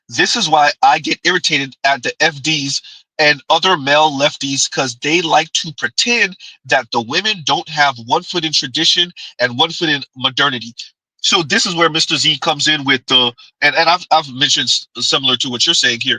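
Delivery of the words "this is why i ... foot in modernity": ordinary delivery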